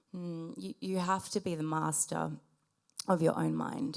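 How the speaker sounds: very gentle, soft-spoken delivery. Retelling the helper's reply in the kitchen: imitating someone speaking gently. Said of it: "she just says really gently".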